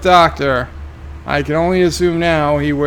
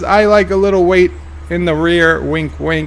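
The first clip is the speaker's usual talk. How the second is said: plain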